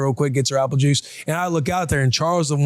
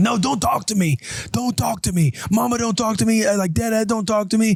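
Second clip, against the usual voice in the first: mock sobbing little-kid voice, high, mid-meltdown; 7 semitones higher than usual. Retelling a daughter crying at dinner: imitating a crying child. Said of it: "to where she's crying. She's like".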